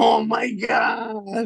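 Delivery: very high, raspy scream at the top of the lungs. Asked to do the freaked-out lady's voice in a group story, imitating a woman screaming. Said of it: "At the top of her lungs over and over".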